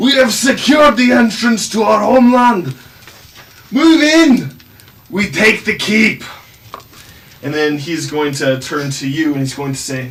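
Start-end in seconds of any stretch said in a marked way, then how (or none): 0.0-6.2 loud, high-pitched rallying shout. Voicing Snorri rallying the dwarves behind him: Snorri rallying his troops. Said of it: "turns to the dwarves behind him and says".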